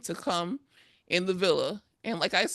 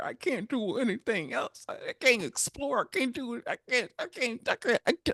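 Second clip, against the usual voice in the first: mock crying, higher pitch; 5 semitones higher than usual. Retelling his complaint about not being able to play basketball: imitating someone crying. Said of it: "Why the fuck are you crying".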